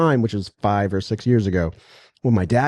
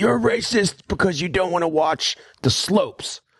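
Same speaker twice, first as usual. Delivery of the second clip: high-pitched yelling; 9 semitones higher than usual. Retelling how his dad yelled at him in a steakhouse, retelling a yell. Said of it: "He's like yelling at me".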